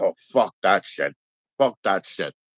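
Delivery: hard, put-on American accent, laid on thick. Retelling a movie line by Sam Neill: imitating Sam Neill. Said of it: "One of those times he was like".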